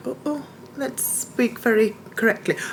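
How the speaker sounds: overly proper English accent. Speaker mimics how americans imitate an english accent: mock english accent. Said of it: "when they try and mimic an English accent".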